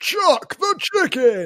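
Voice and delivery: high, swooping announcer-style delivery. Doing an impression of the voiceover guy from The X Factor. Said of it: "the voiceover guy from The X Factor".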